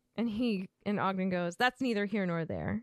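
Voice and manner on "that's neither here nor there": put-on cold, chilly tone. Retelling a story scene, giving Ogden's reply to Gaunt, mock-cold. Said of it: "And he says it coldly".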